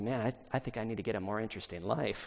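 put-on muttering under breath. Retelling a friend's aside at a dinner party: imitating someone muttering under his breath. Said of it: "under his breath to us".

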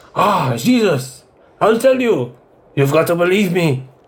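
put-on high-pitched French accent. A player voicing the character Jean-Paul in a role-play scene, with Jean-Paul's French accent. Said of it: "What accent was I supposed to do for Jean-Paul? ... French".

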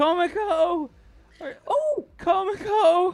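very high-pitched, loud yell. Voicing a yell that the players hear: yelling a name. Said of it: "you hear the yell".

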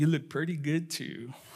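mock grinning tone. Telling a story, quoting the husband's reply, retelling a grinning reply. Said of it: "he replied with a grin".

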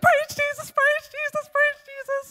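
ecstatic, shrill, loud joyful yelling, pitched way up. Retelling a woman finding groceries on her front step; imitating someone yelling joyfully. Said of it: "Why are you yelling?".

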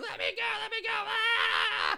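mock, very high, ragged, rough, stretched-out shriek. Retelling a movie scene where a girl is held down: imitating a character screaming. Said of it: "She's screaming".

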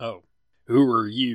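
put-on cowboy voice with a Texas accent. After another speaker says the character is a Texas cowboy: Texas cowboy accent. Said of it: "I meant like he's Texas. He's cowboy".

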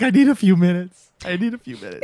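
put-on sobbing, high, ugly-crying voice. Retelling a story about a man still crying, imitating ugly crying. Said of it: "like ugly crying".

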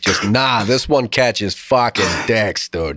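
put-on Boston accent voice. Imagining what old-time writers could not say outright, in a Boston accent. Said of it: "A Boston accent?".

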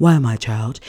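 calm, very low voice. Showing how God sounds when asking why: calm, low God voice. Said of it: "real calm, like, real, like, low".

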